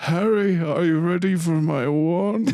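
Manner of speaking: high-pitched, sinister dark wizard villain voice. Imagining a Harry Potter role play night, the speaker does a Voldemort voice. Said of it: "Fucking Voldemort".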